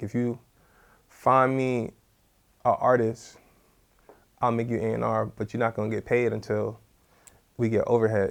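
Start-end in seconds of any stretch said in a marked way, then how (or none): none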